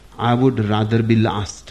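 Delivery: plain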